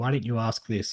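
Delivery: normal talking voice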